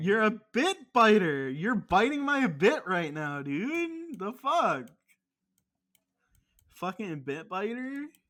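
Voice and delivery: mock-angry, jabbing put-on angry tone. Arguing back after being called a bit biter, angry. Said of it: "why are you mad at this?".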